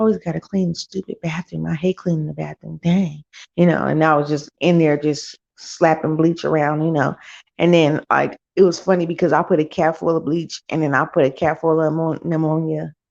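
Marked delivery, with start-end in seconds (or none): 0.0-3.2 put-on mumbling and muttering under the breath. Retelling being told to clean the bathroom: imitating own mumbling under breath. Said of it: "I was mumbling under my breath".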